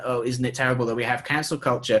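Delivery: normal talking voice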